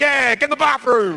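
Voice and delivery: mock-drunk, high-pitched voice. Retelling joining in while wasted at a party, in a mock-drunk egging-on voice. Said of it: "I'm so wasted, I'm getting involved".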